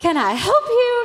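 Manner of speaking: sudden, very loud, very high, shrill snapped yell. Retelling snapping at an older lady who stood watching, retelling a yell. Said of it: "I just yelled".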